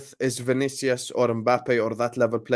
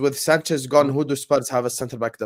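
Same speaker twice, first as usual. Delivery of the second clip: ordinary talk, nothing marked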